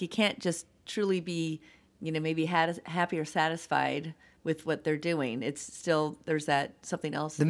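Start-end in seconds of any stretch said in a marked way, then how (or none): none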